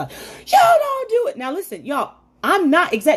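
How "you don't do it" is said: shrill, high, loud, angry shouting. Recounting an argument where a man yelled at the speaker: retelling his yelling. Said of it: "He was yelling".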